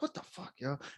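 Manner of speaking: calm, hushed, whispered grumbling mutter. Retelling muttering at a caller while with a doctor: imitating muttering under breath calmly. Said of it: "Under my breath, very, like, calmly".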